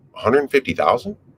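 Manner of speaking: questioning upward pitch rise on thousand. Demonstrating the tone of voice for a figure: rising question tone on thousand. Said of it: "question tone".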